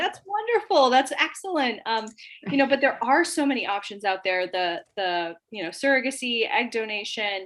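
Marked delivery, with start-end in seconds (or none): 0.0-1.8 put-on boisterous, loud voice, much higher pitch. Recalling how they respond when people confide about IVF, retelling own boisterous reply. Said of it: "I'm the boisterous, loud one in the room going".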